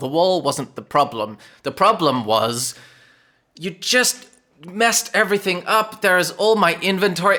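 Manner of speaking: agitated, worked up. Game master as a character complaining to a player about the wall: worked up. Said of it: "I'm getting worked up".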